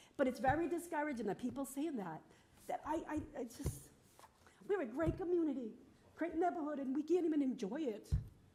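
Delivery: tearful, breaking voice. A resident giving public comment about the neighborhood, crying, voice breaking. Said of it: "Sorry for crying".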